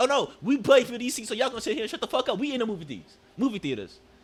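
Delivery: play-acted snarky, rude, hostile, in-your-face tone. Retelling what a woman at the movie theater said: imitating a rude woman's energy. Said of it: "she definitely said bitch with her energy".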